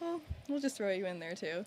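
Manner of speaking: ordinary talk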